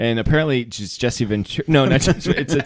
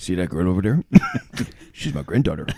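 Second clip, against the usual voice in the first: put-on very deep, low-pitched old man voice; 7 semitones lower than usual. Retelling a friend's favourite impression: old guy from Home Alone impression. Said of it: "His best impression is the old guy from, uh, Home Alone".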